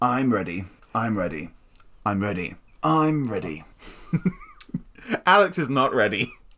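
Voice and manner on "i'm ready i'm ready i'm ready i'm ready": deep, low character voice. Answering whether he's ready in a bit, Bill Nighy impression. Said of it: "Every time you did the Bill Nighy voice".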